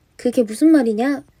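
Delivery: ordinary talk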